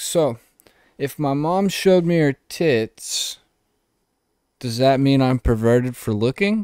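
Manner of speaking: play-acted offhand, unbothered, nonchalant comic voice. Describing a comedian's delivery to another speaker, the speaker imitates a nonchalant comedian. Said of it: "But he talks like this".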